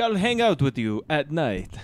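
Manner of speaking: loud, swooping, hammy mock vampire voice.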